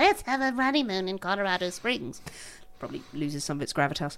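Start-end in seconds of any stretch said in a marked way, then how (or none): 0.0-2.2 nasal, high-pitched delivery. Acting out a man's line, the speaker uses a high nasal voice. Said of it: "he's got a really high nasal voice".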